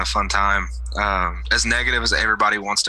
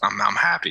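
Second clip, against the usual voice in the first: voice cracking mid-phrase, breaking on "happy". Talking to another speaker on a podcast, voice breaking. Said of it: "Did you hear my voice break right there?".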